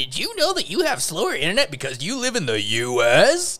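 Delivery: high, loud, sing-song. Imitating Adam from Adam Ruins Everything explaining slow internet: Adam Ruins Everything host impression. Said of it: "this is my impression of it".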